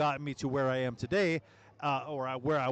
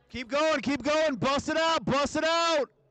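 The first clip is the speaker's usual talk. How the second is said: very high, shrill, loud, pushing yell; 12 semitones higher, 4 dB louder than usual. In the last minute and a half, urging everyone to keep going, yelling. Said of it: "I'm yelling in the mic again".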